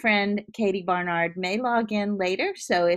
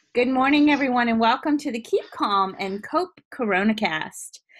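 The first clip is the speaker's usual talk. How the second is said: bright, perky, chipper host voice; 3 semitones higher than usual. Podcast host welcoming listeners at the start of an episode: perky. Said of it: "I know I sound perky".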